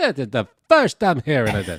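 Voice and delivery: loud, bouncy, emphatic put-on comedian cadence, swinging pitch. Quoting a tweet, doing a good John Mulaney impression. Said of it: "you do a good John Mulaney".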